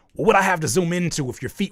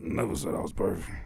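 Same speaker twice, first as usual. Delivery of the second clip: very low, hushed, deep murmur, barely audible; 9 semitones lower, 9 dB quieter than usual. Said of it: "Why your voice got deeper?".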